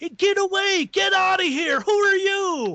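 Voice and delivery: mock very high, full-throated screaming at the top of the lungs. Telling how a man screamed at nobody there, imitating someone screaming. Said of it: "He's screaming at the top of his lungs".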